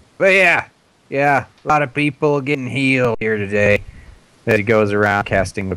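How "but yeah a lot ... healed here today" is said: cranky, grumpy half-orc voice, pitched up. Playing a half-orc priest tending the wounded, grumpy half-orc priest voice. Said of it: "So he's kind of bitter about that. He prefers the wonders of modern civilization. He's very un-half-orc-ish. He's the most civilized grump in history. Yeah, he is a grumpy bastard".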